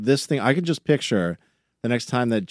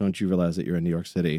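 put-on muttering under breath, lower; 4 semitones lower than usual. Retelling what is said to people blocking the sidewalk: imitating muttering under breath. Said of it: "I'll say it under my breath".

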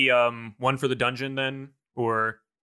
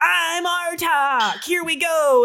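put-on child voice yelling, much higher; 5 dB louder than usual. Narrating a scene, the speaker voices a child running around: child yelling. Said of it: "a single child running around yelling like".

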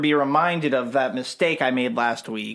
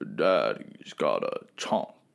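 slow, still, whispered voice, stoic and breathy; 6 dB quieter than usual. Retrying the line after being told to sound more stoic: stoic Thanos voice. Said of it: "a little more stoic".

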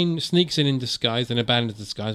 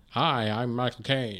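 put-on American accent, quieter; 5 dB quieter than usual. Retelling a film scene of arriving at a gate: imitating an American accent. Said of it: "does his American accent".

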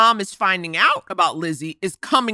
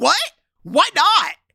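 play-acted, very high, indignant, angry outburst; 9 semitones higher than usual. Talking about a man on a show, the speaker imitates his angry outburst. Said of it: "Why does he sound so angry".

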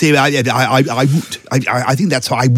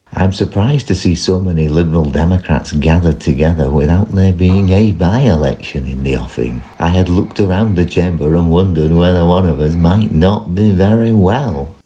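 gentle put-on politician voice, lower; 7 semitones lower than usual. Performing a sent-in impression in a parliament-style speech: gentle William Hague impression. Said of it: "a gentle William Hague".

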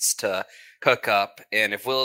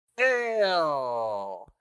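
happy, cheerful, higher pitch; 5 semitones higher than usual. In a role-play, answering a phone call from a caller, happy. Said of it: "Why do you sound so happy".

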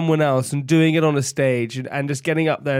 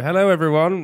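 captain-style plane tannoy announcement voice; 2 semitones higher than usual. Pretending to propose over a plane's tannoy: mock plane tannoy announcement. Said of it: "And I would do it over the tannoy, and I'd go".

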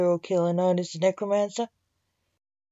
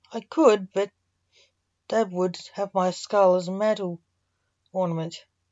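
ordinary delivery, nothing marked

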